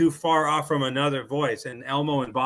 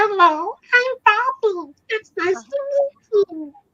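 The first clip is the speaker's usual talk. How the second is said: put-on squeaky, shrill, very high and loud toddler voice; 5 dB louder than usual. Showing how the Bobby character sounds: Bobby voice. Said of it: "Doesn't it go something like that?".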